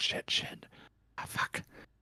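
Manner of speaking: slow, hushed, very quiet, frightened, panicked whisper. Voicing people overheard after an intimidation roll: panicked whispering. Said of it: "You hear them whispering".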